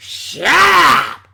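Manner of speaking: very loud, rough bellowing shout. Retelling a wrestler telling someone to shut up, Vince McMahon impression. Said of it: "In his best Vince McMahon impression".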